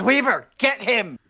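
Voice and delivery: very high shouting yell. Voicing a character holding an enemy down, calling to weaver: in-character shout. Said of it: "he just shouts".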